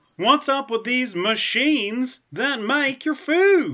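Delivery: botched, terrible very high comic voice with Southern twinge. Joking about Space Jerry using the Force: terrible Jerry Seinfeld impression. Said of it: "That was a pretty terrible Seinfeld".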